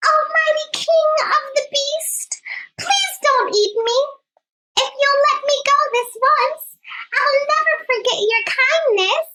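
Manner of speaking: wee, very high, squeaking mouse voice. Reading a story aloud, the narrator voices the mouse answering the lion in a squeaky wee voice. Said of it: "he squeaked in a wee little voice".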